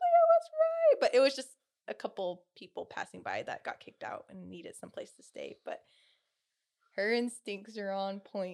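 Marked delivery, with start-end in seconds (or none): 0.0-1.0 acted-out screaming, higher and louder. Retelling a loud bang on the door, imitating screaming. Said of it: "We all start screaming and we're like".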